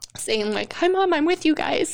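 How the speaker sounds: holding back tears. Telling another speaker about a sign from a lost child: emotional, holding back tears. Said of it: "I didn't know I was gonna be so emotional".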